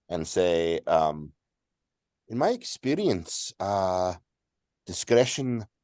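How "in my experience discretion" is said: Spanish accent attempt drifting into an Irish accent. Voicing a character answering the queen: attempted spanish accent slipping into irish. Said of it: "I keep trying to sound, uh, Spanish and I keep becoming Irish".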